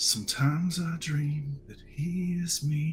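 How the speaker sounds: muttered under breath. Silas bends down a little and speaks under his breath. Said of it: "just kind of under his breath".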